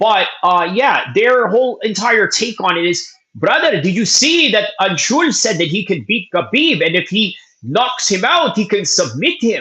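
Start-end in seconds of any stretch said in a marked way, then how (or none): 3.4-9.6 clumsy, very poorly done put-on Indian accent. Mimicking indian guys' take on a claim, in a very bad indian accent. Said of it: "very bad Indian accent".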